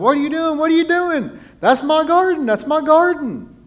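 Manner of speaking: frantic, shrill, very high-pitched screaming. Retelling a neighbor's reaction in a story: imitating a neighbor screaming. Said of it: "started screaming".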